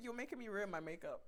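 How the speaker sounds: normal talking voice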